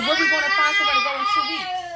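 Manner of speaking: high, fast, loud panicked cry, blurted out.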